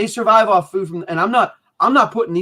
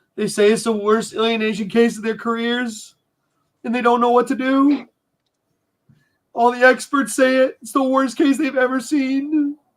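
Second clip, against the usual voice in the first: tearful crying speech, pitched up; 5 semitones higher than usual. Talking with two others, the speaker speaks while crying. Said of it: "Sorry for crying".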